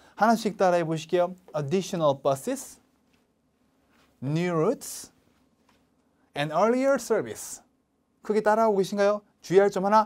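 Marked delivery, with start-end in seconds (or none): 1.6-7.6 rises on buses and routes, falls on service. Modeling an English list for learners to repeat: rise, rise, then fall. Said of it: "올리고 올리고 내리는 거".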